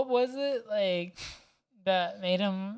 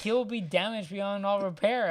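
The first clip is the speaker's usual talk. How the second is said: ordinary delivery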